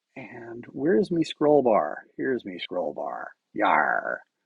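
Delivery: very low, sing-song, swooping pirate voice. Looking for the scroll bar on screen, talking like a pirate. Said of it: "I don't know why I'm talking like a pirate".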